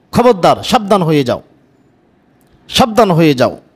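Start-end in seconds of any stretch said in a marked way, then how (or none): none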